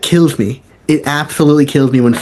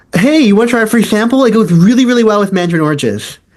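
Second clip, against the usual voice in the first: put-on high, raised yelling call; 8 semitones higher than usual. Retelling calling out a free sample offer to a shopper: retelling a yell across the store. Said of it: "I will yell from across the hallway".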